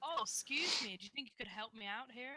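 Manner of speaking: put-on American accent. Playing a game, trying to deceive a character, in a put-on American accent. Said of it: "I don't know why I'm going American".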